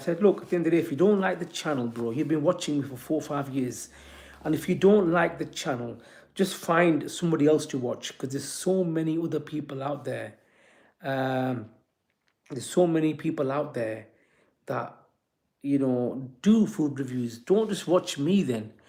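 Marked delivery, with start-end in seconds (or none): none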